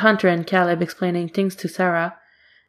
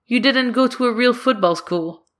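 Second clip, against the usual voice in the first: dismissive, brushing-off tone; 4 semitones higher than usual. Reading a story, Hunter answers Sarah dismissively.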